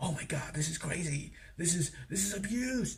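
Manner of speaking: hushed half-whisper, very quiet, barely audible. Retelling how a character reacted in the chapter: imitating Ylva half-whispering.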